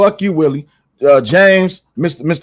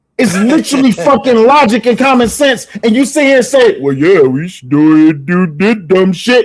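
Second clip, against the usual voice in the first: furious, angry, high-pitched rant; 5 semitones higher than usual. Arguing with the other speaker, who just pissed the speaker off, yelling angrily. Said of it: "I'm yelling because you just you pissed me off".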